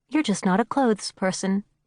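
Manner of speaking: ordinary delivery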